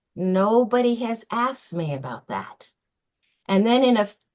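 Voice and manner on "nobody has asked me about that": put-on very weak, frail, feeble old man voice. Retelling an old man's answer when asked about his funeral, imitating a very frail voice. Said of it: "he said in a very frail voice".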